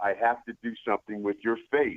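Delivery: normal talking voice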